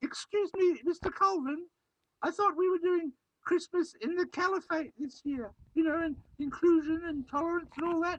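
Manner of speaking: very high, stupid, goofy put-on voice. Interrupting the presenter to ask a question: stupid voice. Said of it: "please stop doing that stupid voice".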